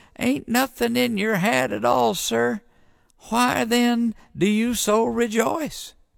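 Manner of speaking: thin trembling squeak, very high and creaky. The deacon questions the preacher before the congregation, in a quivery little voice. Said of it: "said the deacon in a quivery little voice".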